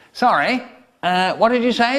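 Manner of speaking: chirpy, friendly tone. Retelling the inspector asking at the door: imitating the inspector speaking cheerily. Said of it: "said the inspector cheerily".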